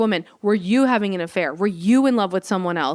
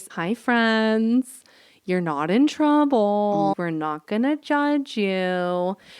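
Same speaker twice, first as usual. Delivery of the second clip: kindly put-on teacher voice, drawn-out "you". Retelling how she spoke to the students, using her teacher voice. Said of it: "trying to use my teacher voice".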